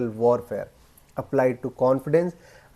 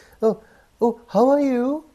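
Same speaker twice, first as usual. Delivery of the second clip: upward inflection, rising tone on final you; 11 semitones higher, 4 dB louder than usual. Demonstrating a speaking mistake that kills authority, rising tone at sentence end. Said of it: "Rising tone at the end of the sentences".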